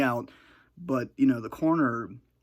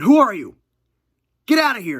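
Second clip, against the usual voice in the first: very loud, swooping, terrified panicked scream; 8 semitones higher, 12 dB louder than usual. Retelling someone freaking out in the middle of the night, retelling frightened screaming. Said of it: "just screaming".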